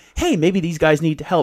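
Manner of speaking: plain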